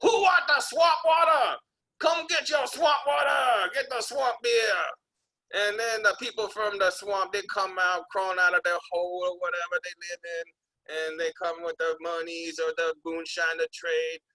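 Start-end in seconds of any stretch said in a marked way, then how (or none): 0.0-4.7 put-on high hawker's holler. Speaker acts out calling out while going around the swamp by boat: retelling a shout. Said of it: "and I shout out".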